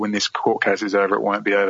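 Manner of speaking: ordinary delivery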